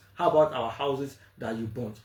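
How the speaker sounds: ordinary delivery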